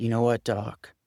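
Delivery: put-on New England accent. Retelling what a man told him after his apology, New England accent. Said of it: "Kind of in that New England accent".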